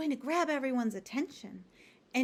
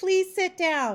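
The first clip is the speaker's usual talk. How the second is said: kind yet firm, friendly tone in a raised voice; 6 semitones higher, 8 dB louder than usual. Showing how you give misbehaving children a directive statement, firm but friendly. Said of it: "in a firm but friendly way".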